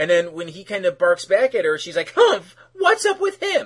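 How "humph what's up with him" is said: very high, loud, snotty, mocking whine.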